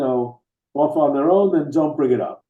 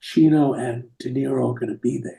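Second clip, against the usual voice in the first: put-on quiet, hushed whisper, lower pitch; 4 semitones lower than usual. Retelling what the agent said on the phone: imitating a quiet whisper. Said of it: "he gets very quiet and he says".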